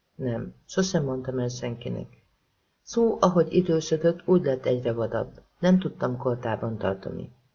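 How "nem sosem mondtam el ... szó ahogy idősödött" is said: usual speaking voice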